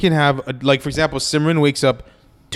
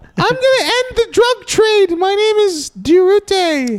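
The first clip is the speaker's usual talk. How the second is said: put-on Filipino accent with very high pitch; 4 dB louder than usual. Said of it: "It's Filipino".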